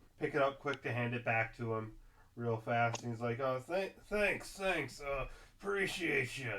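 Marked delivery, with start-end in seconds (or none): 3.4-6.5 acted drunken voice, higher pitch. Voicing a man thanking a player for handing back his hat: acting drunk. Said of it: "He's very clearly drunk".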